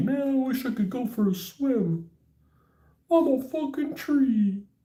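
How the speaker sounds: very high, slow, drawn-out weepy weeping willow voice. Speaker voicing a willow tree near a lake, in a weeping willow voice. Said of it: "That's my Weeping Willow voice".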